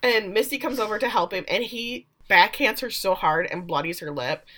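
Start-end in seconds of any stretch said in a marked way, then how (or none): none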